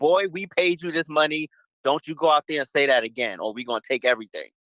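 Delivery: blunt, dead-serious, menacing tone, no subtlety. Acting out what the press wants to say: imitating a blunt threat. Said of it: "Say it like you fucking mean it".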